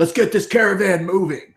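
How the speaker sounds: shouting. Voicing a character calling out to the caravan: yelling an order. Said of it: "just yells out to".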